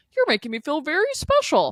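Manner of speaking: insincere put-on voice, high, sing-song, swooping, rehearsed. Imitating how Gary talks to women, insincere Gary impression. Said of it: "Sorry for my, you know, Gary impression".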